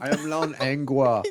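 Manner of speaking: put-on German accent. Doing a german voice after being asked: put-on german accent. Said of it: "do your German voice?".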